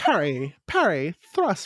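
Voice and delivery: put-on sing-song, swinging British accent. Imagining a character's line in Rose's voice: Rose voice, British accent. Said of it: "Why am I giving her a British accent?".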